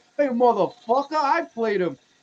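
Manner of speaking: heavy put-on New York accent. Retell a man confronting someone at a convention, imitating a thick New York accent. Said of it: "got like thick New York".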